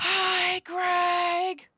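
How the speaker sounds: loud, high yell at full volume. Calling out to Greg to get his attention, yelling as loud as possible. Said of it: "I yell as loud as I can".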